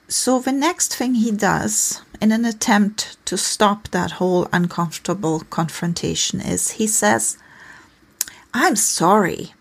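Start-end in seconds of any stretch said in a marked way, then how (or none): 8.5-9.3 imitated irritated voice. Explaining a couple's conflict, quoting the man's apology as mimicking an irritated apology. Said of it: "in pretty much that irritated voice".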